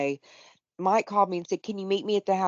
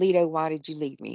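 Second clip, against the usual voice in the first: tearful pleading voice; 2 semitones lower than usual. Retelling how the mother-in-law spoke in the hospital room: imitating crying mother-in-law. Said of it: "my mother-in-law is crying, saying".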